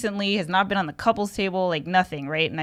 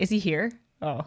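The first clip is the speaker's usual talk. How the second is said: ordinary delivery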